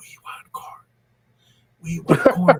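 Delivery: breathy, whispered demon voice. Acting out what a demon says to a man: put-on demon voice. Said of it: "the demon's gonna say".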